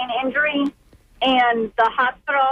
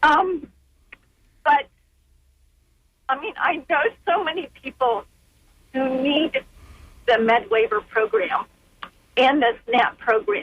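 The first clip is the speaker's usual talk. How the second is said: emotional, slower. A caller speaking about their brother's support program, emotional. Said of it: "I didn't think I get so emotional".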